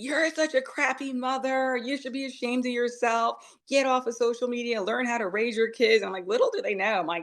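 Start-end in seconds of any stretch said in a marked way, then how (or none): 0.0-6.0 high-pitched, angry scolding, yelled. Retelling what online commenters wrote: imitating commenters yelling. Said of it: "yelling at me".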